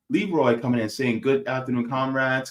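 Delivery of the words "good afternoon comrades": normal talking voice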